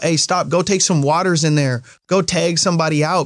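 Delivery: ordinary talk, nothing marked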